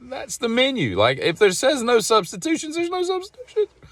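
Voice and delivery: very high, fed-up, rising exasperated delivery. Retelling what they wanted to say during an argument over the menu, high-pitched. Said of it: "Voice just went up pretty high there".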